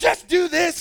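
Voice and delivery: high-pitched yelling. Recalling piano lessons, quoting mom yelling at them: retelling mom's yelling. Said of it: "And just yelling at me".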